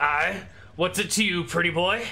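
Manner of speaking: high dwarf voice. Game narrator voices a dwarf who pops up to question the player, dwarf character voice. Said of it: "gives you a gnarled look and goes".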